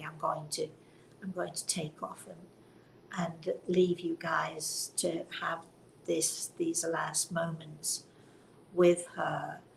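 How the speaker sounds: put-on quiet whisper. Retelling whispering to her husband at the bedside: retelling a whisper. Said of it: "I whispered to her husband really quietly".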